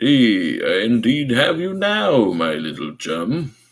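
put-on radio announcer voice. Retelling a cartoon chase scene, voicing the chaser, in a radio voice. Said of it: "You got a great radio voice".

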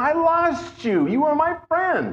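high, trembling, quavering voice. Acting out what he said as he shook: imitating a shaking voice. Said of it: "Now you can feel him shaking".

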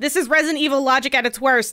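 normal talking voice

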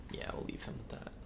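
soft, sneaky whisper.

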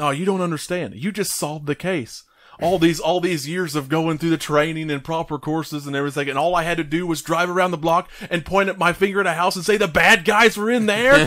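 fed-up, irritated tirade. Retelling a movie scene where a character is angry: imitating someone pissed off. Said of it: "and he's all pissed".

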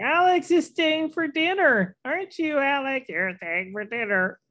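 put-on squeaky, very high, drunk-sounding baby voice. Mocking people who talk for their pet, drunk-baby pet voice. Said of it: "talk in its voice, you know, like a drunk baby".

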